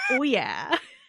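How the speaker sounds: cocky, self-satisfied tone. Voicing a woman in a video who pushes another off the mic: imitating a smug woman. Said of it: "It's, like, so smug".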